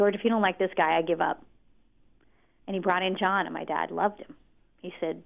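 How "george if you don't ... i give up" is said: ordinary delivery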